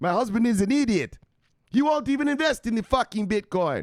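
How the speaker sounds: bad fake Indian accent, very high and loud. Voicing what a wife would say about her husband, in a bad put-on indian accent. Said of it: "that wasn't an Indian accent".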